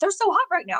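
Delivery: mock very high, thrilled, excited shriek. Retelling a first reaction to ducks in a shell shop, retelling a scream. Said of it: "because I just screamed".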